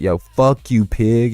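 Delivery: slow, aggressive, hostile jeering tone. Retelling a video where a kid swears at a cop: imitating someone being aggressive. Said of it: "You don't have to be so aggressive".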